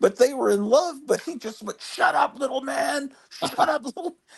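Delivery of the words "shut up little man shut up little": acted scornful screaming, high-pitched. Retelling a neighbor's recorded fights through the wall: imitating someone screaming. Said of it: "all night screaming".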